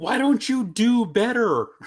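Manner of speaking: high, slow mock yell. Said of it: "You yell at the screen".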